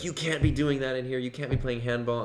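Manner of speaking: put-on strong New York accent, scolding. Retelling a lady's confrontation with some girls, in a strong new york accent. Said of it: "she had like this strong accent".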